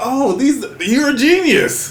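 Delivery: high, slow, starstruck gushing, sounding dazzled. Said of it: "anybody from overseas, I'm like".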